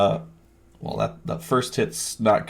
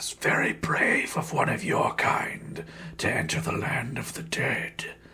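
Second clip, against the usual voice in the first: breathy, hushed whisper with hissing sibilant s sounds; 3 semitones higher, 6 dB quieter than usual. Narrating a game, the armored figure speaks to a player's character: hissing sibilant voice. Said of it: "hissing, sibilant voice as it speaks to you".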